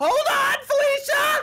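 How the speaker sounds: very high, screeching, high-pitched voice. Recalling a past game of Party Animals with friends, imitating Ryan screeching. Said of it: "And Ryan was screeching".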